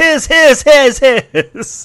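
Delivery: loud, high-pitched villainous tone. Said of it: "he proclaims the sword his!".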